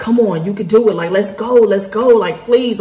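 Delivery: earnest, begging pleading. Retelling a frightening landing, quoting the passenger beside: imitating a pleading passenger. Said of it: "he was pleading and just praying out loud".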